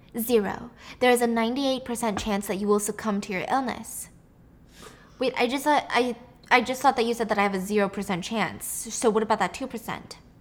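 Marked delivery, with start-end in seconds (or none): none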